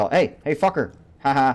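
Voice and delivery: mock high-pitched jeering, taunting baiting tone. Describing a game role that taunts zombies then runs away: acting out trash-talk taunts. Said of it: "He's just a shit talker".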